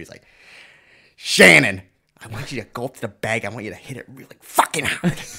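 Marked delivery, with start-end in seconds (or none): 1.2-5.2 very loud voice cutting right through. Retelling a coach talking in his ear at the bag: imitating Paulie's cutting voice. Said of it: "had that voice that cut right through".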